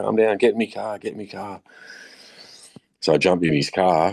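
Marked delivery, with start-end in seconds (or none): 0.0-1.6 mock-panicked man's voice, freaking out. Telling a story about a Japanese man's reaction, imitating a man freaking out. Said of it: "he's like freaking out".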